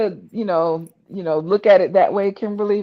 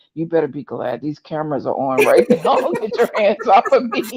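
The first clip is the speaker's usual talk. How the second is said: muttering quietly under breath. Retelling what she mutters when grabbed on camera: imitating muttering under breath. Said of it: "I could just hear her under her breath going".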